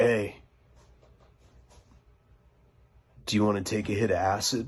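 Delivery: hushed, secretive half-whisper under the breath. Retelling what Kyle half-whispered to him: half-whispering. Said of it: "he whispers to me and he's like".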